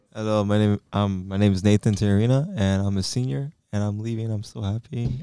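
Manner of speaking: sad-sounding voice. Departing senior introducing himself on the podcast, sounding sad. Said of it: "You sound sad about it".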